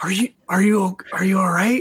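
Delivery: theatrical whisper. A man hovering above the listener checks on them, stage whisper. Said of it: "He's stage whisper".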